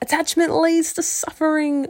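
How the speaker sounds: high, loud, shouted yell. Reading the narrator's reply from the boat to her on the dock: yelled back. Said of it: "I yelled back".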